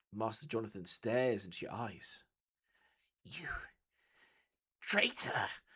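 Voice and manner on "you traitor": shrill, loud, swooping hissed words. Narrator voicing the stabbed mentor speaking through bloody teeth: Master Jonathan hissing. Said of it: "he hisses through bloody teeth".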